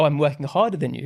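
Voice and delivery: ordinary delivery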